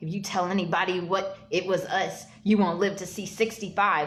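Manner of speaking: mock-threatening, acted-out menacing delivery. Recounting a story, the speaker acts out a man threatening the uncle; retelling a threat. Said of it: "threatened the uncle".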